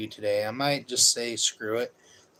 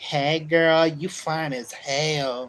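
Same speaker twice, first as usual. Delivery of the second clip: goofy, put-on effeminate voice, high, very slow; 5 semitones higher, 5 dB louder than usual.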